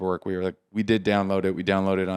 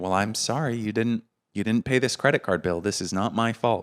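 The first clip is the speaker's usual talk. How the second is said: snooty, patronizing, talking-down condescending tone; 2 semitones higher than usual. Retelling what the lady said about the unpaid bill: imitating a condescending tone. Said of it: "kind of condescending about it".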